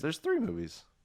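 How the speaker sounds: voice cracking partway through, pitched high. Chatting about watching the movies together, with a terrible voice crack. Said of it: "That was a terrible voice crack".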